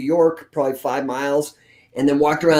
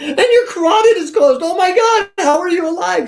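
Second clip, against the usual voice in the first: very high, loud, panicked, freaked-out alarm; 5 dB louder than usual. Retelling what the ultrasound technician said while scanning, imitating someone freaking out. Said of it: "She's like freaking out".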